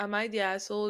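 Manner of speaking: ordinary talk, nothing marked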